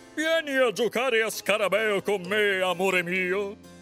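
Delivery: calling out loudly. The king calls up from the bottom of the stairs to the queen, shouted from downstairs. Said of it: "gridò il re in fondo alle scale".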